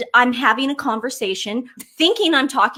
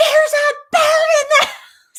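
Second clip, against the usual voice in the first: mock piercing high shriek, loud and drawn out; 6 dB louder than usual. Retelling finding a bird in the house: imitating screaming. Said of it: "I start screaming".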